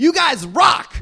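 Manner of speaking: play-acted, high heckling yell. Retelling heckling a man dragged out of a bar, retelling a heckling yell. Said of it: "I kept yelling at him like".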